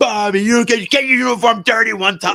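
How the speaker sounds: put-on, very high, screaming yell. Retelling how a fan yelled at a player: imitating a fan screaming. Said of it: "some guy starts screaming at Bobby".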